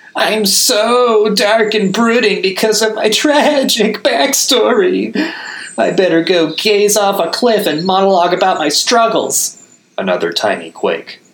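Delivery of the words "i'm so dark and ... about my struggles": very high cry, "so" drawn out. Reading a monkey's taunt aimed at Igneous: monkey mocking Igneous, crying out. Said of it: "the monkey cried on".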